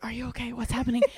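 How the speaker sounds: hushed half-whisper, under the breath. Retelling a scared meeting with friends in the store, imitating a half-whisper. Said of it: "we're whispering to each other".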